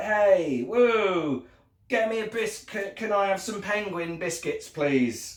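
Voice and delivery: mock dazed stoner drawl, slow, woo stretched. Voicing the moon drawn inside an album cover: put-on stoned voice. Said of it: "he's a bit stoned".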